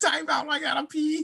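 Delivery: very high, goofy, comic squeaky voice. Repeating another speaker's time-out line: imitating a hilarious voice. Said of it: "That shit's hilarious, that voice".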